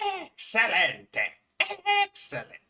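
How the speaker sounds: very high, loud, swooping game-show-style voice, wide pitch swings. Speaker comparing a game character's voice across different games: high-pitched Wario voice. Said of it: "his voice in Wario Land four is a little high pitched".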